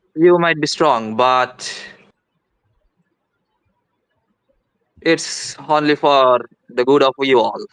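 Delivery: voice eases a little, gentler. Game narrator voices a character stepping back after the snakes, slightly softened voice. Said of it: "the voice softens a little bit and goes".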